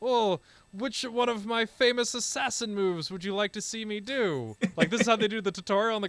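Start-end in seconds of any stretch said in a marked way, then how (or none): 0.0-4.5 dry, heavily sarcastic put-on tone. Retelling a game's tutorial scene: imitating a sarcastic character. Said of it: "great sarcastic moments".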